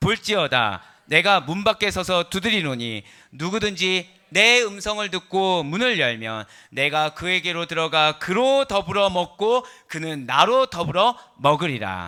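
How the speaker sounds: loud, slow reading aloud in unison.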